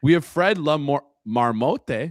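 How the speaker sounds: Spanish accent with drawn-out words. Announcing a forecasting animal from Quebec, slipping into a Spanish accent. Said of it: "I said that in like a Spanish accent".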